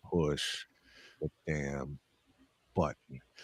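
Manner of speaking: very quiet, slow, deliberate, drawn-out delivery. Retelling a colleague's request, imitating Playmaker saying it slower. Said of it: "Playmaker said it even slower".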